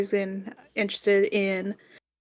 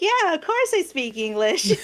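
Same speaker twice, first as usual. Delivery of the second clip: put-on valley girl accent, high and swooping; 8 semitones higher than usual. Imitating a woman who sounds posh even in japanese: valley girl accent. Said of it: "She has she has like this Valley Girl kind of tone".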